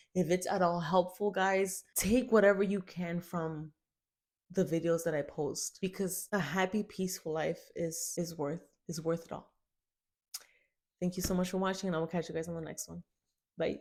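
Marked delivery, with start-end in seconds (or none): 5.8-13.8 soft voice overcome with emotion. Thanking viewers at the end of a video, emotional. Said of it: "I'm sorry that I got emotional".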